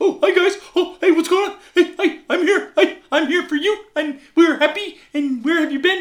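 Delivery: loud, very high, thrilled, happy dog voice chatter. The speaker voices how their dog greets them coming home, in an imagined excited dog voice. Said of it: "i imagine his voice is just like".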